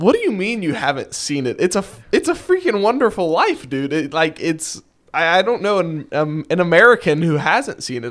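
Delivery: shocked, stammering, tripping over words in disbelief. Reacting to the other speaker never having seen the film: stuttering in shock. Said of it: "I'm stuttering over my words here 'cause I'm in such shock".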